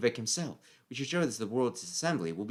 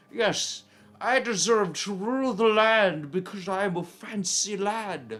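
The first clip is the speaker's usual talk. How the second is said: put-on haughty, pompous, loud, drawn-out old lord voice; 9 semitones higher, 5 dB louder than usual. Imagining how an old, corpulent ruler would talk: pompous old noble voice. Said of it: "some old, like, corpulent guy who's like".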